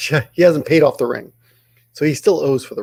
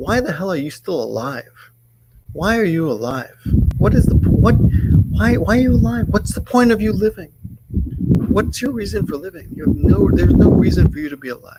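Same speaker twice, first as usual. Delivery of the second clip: play-acted derogatory, scornful jeering, high; 8 semitones higher than usual. Retelling what a husband said to his wife: imitating a derogatory tone. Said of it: "really derogatory way, like".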